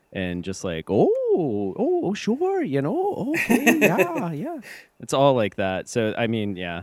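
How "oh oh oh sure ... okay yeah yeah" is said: put-on very high, sing-song, drawn-out Wisconsin accent. Describing friendly people met in northern Wisconsin: imitating a Wisconsin accent. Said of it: "that accent, like, in Wisconsin".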